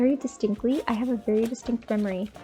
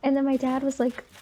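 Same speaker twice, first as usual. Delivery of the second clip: usual speaking voice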